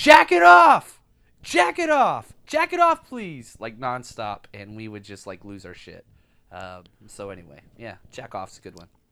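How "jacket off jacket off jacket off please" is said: very loud, very high, shrill, drawn-out scream. Retelling how an older teacher walked the hallway, imitating a teacher screaming. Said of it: "walk down the hallway screaming".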